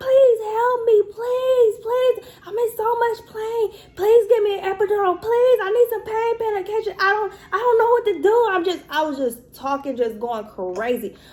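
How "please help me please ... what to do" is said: put-on, very high, frantic, desperate begging screams. Retelling her time in triage to listeners, acting out her own screaming. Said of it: "I'm screaming".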